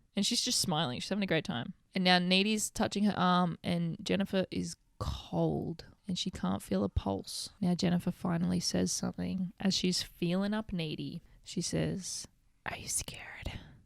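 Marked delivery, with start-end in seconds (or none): 12.7-13.5 sultry, breathy, very quiet seductive whisper. Recapping a film scene where Jennifer asks Needy something, in Jennifer's mock-sexy voice. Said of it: "In like this real sexy voice".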